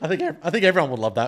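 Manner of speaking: cracking, breaking voice. Talking about a hoped-for game update, voice cracking. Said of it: "voice crack".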